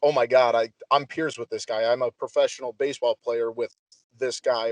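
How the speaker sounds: ordinary talk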